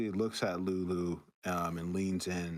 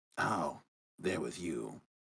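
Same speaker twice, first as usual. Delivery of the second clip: fantasy hag character voice; 2 semitones lower than usual. Voicing the hag as she turns to the party: hag character voice. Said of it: "the hag turns and looks at the party".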